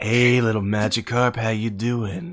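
sensual, seductive whisper. Voicing another player's drawn creature approaching a Magikarp: sensual whisper. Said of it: "speak, like, in, uh, like, sensual whispers".

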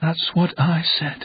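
very quiet. The little man replies to the narrator, very quiet. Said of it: "the little man replied very quietly".

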